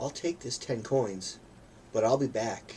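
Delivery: put-on twelve-year-old kid voice. Voicing a twelve-year-old who takes coins and threatens. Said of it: "Twelve-year-old, twelve-year-old threats".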